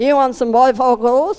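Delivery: put-on Kiwi accent. Speaker retelling a Kiwi mate's phone call to them, in a Kiwi accent. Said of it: "he speaks like this".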